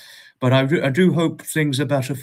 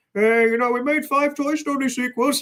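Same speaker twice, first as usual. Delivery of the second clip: very high, cartoonish character voice; 12 semitones higher than usual. Imagining a Toy Story character announcing the sequels, Ham voice. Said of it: "That's the best impression of Ham I could do".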